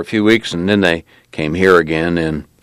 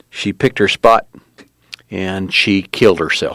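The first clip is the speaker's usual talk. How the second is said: ordinary delivery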